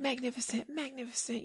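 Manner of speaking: very high, soft, hushed fake-tearful gushing. Retelling how a late-night host gushed at the Oscars, imitating James Corden's fake tearful gushing. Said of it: "trying to make himself cry".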